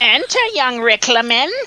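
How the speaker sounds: put-on high voice of an old crone. A game master voices a woman inviting the player into her wagon, in a crone voice. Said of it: "kind of like a crone".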